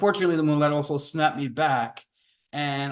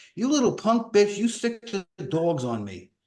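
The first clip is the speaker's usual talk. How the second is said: angry, pissed-off, pitched-up swooping delivery; 5 semitones higher than usual. Recounting being surrounded by people with dogs, the speaker is retelling an angry insult. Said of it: "getting really more pissed off at them".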